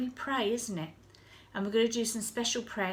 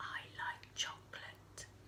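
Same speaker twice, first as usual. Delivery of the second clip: hushed little whisper, very quiet, barely there. Playing a game where listeners guess the words: very quiet whisper. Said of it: "I am going to speak very, very quietly".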